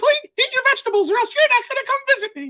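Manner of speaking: squeaky, very high voice. Trying out what to say to the kids at home: Mickey Mouse voice. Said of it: "I'm going to throw some Mickey at them".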